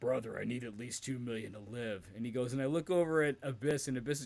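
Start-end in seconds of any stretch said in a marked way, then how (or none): 0.0-2.0 sad, downcast, grizzled voice. Retelling a backstage story, quoting Hulk Hogan: imitating Hulk Hogan sounding sad. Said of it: "Hogan's just looking kinda sad and grizzled".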